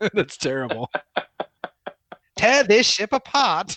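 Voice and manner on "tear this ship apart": shrill, very high, loud, daft put-on Cockney accent. Quoting a line they heard, the speaker tries it in a silly cockney accent. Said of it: "it sounded too like Cockney and silly".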